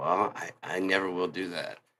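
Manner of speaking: mock let-down, slow, disheartened, disappointed reply. Retelling what an AI said about consciousness: imitating a disappointed voice. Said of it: "you could hear the disappointment in his voice".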